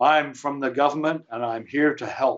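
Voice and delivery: obvious, clumsy put-on American accent. Quoting someone's famous remark, in a bad american accent.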